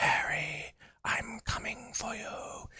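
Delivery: slow, dragged-out, menacing whisper. Speaker recalls a scene from the last Harry Potter film: Voldemort's menacing whisper. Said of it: "whispers gr- like menacingly".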